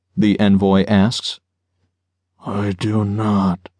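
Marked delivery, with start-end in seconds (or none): 2.4-3.6 lifeless, zombie-like tone, as if hypnotized. A narrator reads a man answering an envoy's question, zombie-like tone. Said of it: "Jeremiah says in a zombie-like tone".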